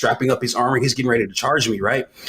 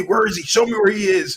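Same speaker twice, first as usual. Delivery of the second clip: loud, angry put-on yell; 9 semitones higher than usual. Retelling a game scene where the Rhino yells at people, imitating someone yelling. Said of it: "he's like yelling at them".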